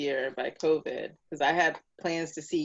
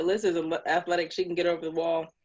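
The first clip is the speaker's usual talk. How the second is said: ordinary talk, nothing marked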